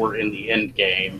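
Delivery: ordinary delivery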